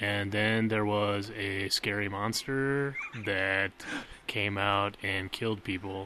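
dull, lifeless, soft monotone drone. Co-host imagines them both freezing up on tv, in a flat monotone delivery. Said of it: "we'd go monotone and be like".

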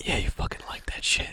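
fast, unvoiced ASMR-style whisper.

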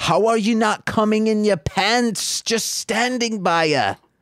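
awful put-on British accent, high pitched. Retelling a scene where a bartender screams at a guy, in a terrible put-on accent. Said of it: "That's a terrible accent".

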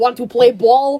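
put-on spoken in a Russian accent. Recounting their own scripted line in a show, the speaker performs it in a Russian accent. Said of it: "My Russian accent".

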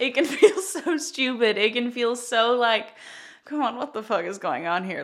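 tearful laughing, crying laughing through the words. Explaining something to listeners and cracking up, crying laughing. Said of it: "I'm literally crying laughing".

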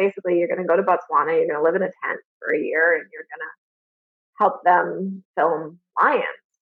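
usual speaking voice

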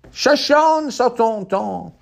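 very high, shouted yell. Quoting a movie scene: Christoph Waltz impression, yelling. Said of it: "that was my, uh, Christoph Waltz".

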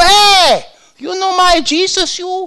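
put-on very high, very slow broken English with Italian accent. Recalling him at a gas station, imitating Papa Salerno's broken Italian. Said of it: "He had that broken Italian".

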